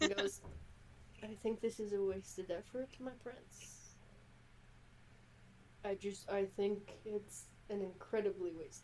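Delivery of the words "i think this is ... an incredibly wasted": whispering, much quieter. A game master voices a character leaning forward to address his prince: whispering. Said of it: "you can hear him whisper perfectly fine".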